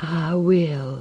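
faint breathy voice. Amanda answers the man asking her to be his wife, breathed faintly. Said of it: "she breathed faintly".

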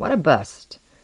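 plain

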